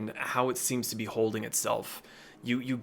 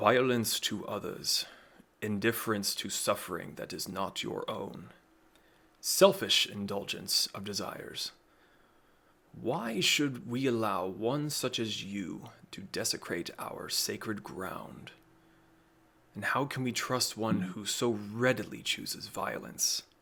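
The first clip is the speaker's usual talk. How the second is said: low, deep rumbling tree creature voice; 3 dB quieter than usual. Voicing the tree-like creature speaking to the awakened player, in a deep rumbling voice. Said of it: "a deep, rumbling voice comes out from it".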